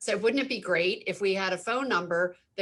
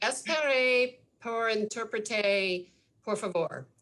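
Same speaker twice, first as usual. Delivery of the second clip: slow, questionable, iffy Spanish accent. Showing on request how call takers answered in spanish: questionable spanish accent. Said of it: "The accent, I don't know".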